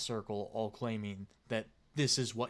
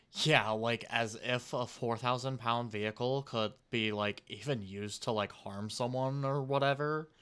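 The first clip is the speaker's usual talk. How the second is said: normal talking voice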